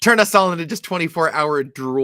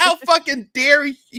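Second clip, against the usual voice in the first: very high, stretched-out, drawn-out screech; 10 semitones higher than usual. Retelling a reaction to news of a TV remake: retelling a scream. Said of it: "I screamed at my T V".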